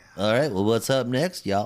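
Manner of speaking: TV announcer voice. Moving the show on to the next topic, speak like the commercial break guy. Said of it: "You sounded just like the commercial break guy".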